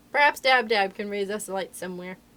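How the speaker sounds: ordinary delivery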